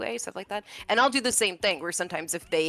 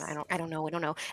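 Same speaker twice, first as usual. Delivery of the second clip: put-on nervous voice, quieter; 6 dB quieter than usual. Retelling feeling unsure at early recording sessions: imitating own nervous self. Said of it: "you could feel a little nervous".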